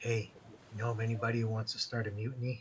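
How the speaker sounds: whispered in character. Whispering in character to a crew member while walking by: whispering in character. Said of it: "I am gonna whisper something to this guy".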